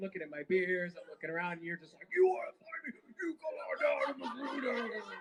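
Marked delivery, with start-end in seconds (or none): 2.1-5.0 mock wild, high screaming, each word dragged out. Retelling how the other speaker dared people to find him: imitating someone screaming. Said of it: "you were screaming at".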